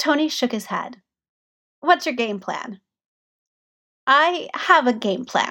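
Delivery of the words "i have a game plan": guarded, evasive, cagey, very drawn out. Narrator reads Peter answering Tony's question about his game plan, cagey. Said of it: "Peter said cagily".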